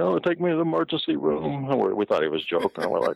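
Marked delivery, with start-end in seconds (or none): 0.0-1.7 very high, whiny, sobbing crying voice. Recalling a man with a cut hand begging for the emergency room, imitating someone crying. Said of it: "starts crying like".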